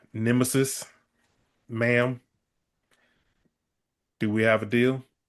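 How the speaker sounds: put-on deep down-south Texas accent. Voicing a character pictured as a deep-south Texas dude: deep southern Texas drawl. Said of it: "a deep down south, like, I don't know, Texas dude".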